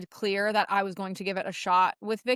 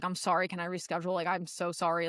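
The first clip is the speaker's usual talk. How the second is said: acted crying voice, quieter; 2 semitones lower, 5 dB quieter than usual. Retelling showing up to a call with a coach: imitating own tearful apology. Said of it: "in tears".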